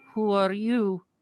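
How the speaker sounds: very high-pitched character voice, pitched way up. Voicing the sister character answering the party: Rose voice. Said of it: "and says".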